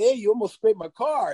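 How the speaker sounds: put-on Italian tough-guy accent. Imitating a friend who suddenly slips into tough-guy talk: imitating Tony's Italian mode. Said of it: "you just went into Tony Italian mode".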